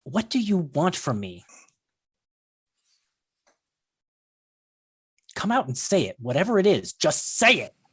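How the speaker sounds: growling with frustration. Voicing a character speaking to a player during a dance: growling. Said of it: "kind of growls at you and says".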